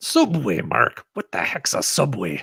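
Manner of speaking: rough, put-on pirate voice. Taking turns reading names aloud, in a pirate voice. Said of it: "in our best pirate voice".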